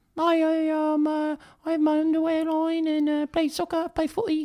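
very high-pitched, slow, soft voice. Retelling hearing someone speak for the first time: David Beckham impression. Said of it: "and he opens his mouth, he's like".

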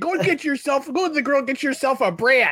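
put-on Midwestern accent. Imitating what they waited for him to say, in a Midwestern accent. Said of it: "Like that Midwestern".

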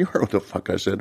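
put-on aggressive voice. Retelling a restaurant fight, imitating the other guy talking aggressively. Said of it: "He's, like, all aggressive".

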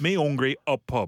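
put-on speaking with a Wigan accent. Showing how people with the Wigan accent miss out words, in a Wigan accent. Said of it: "but then it's the Wigan accent".

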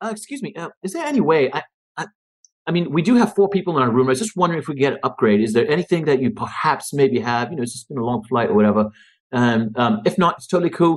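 speaking in a put-on British accent. Retelling asking hotel staff for a room upgrade, british accent. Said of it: "I speak in a British accent".

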